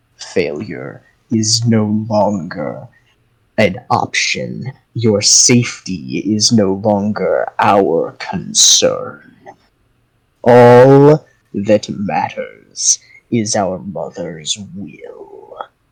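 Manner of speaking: deep, thrumming, rumbling echoing voice, very slow. Narrating a game scene, voice an unseen speaker repeating its message in a deep, rumbling, echoing voice. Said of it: "But you hear just this echoing, deep thrumming, like rumbling in your chest kind of voice, just almost, not quite, but almost rattling the very marrow of your bones as it just rolls through you and th".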